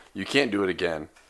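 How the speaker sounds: usual speaking voice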